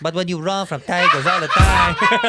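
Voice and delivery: loud, very slow, bad Nigerian accent. Mocking the other speaker's attempt at an accent: imitating a bad Nigerian accent. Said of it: "That's the exact same accent you do".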